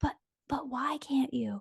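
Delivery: faint, tiny, soft little whisper voice. Retelling a tiny inner voice that questioned a choice: imitating a tiny whisper. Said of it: "Whisper voice".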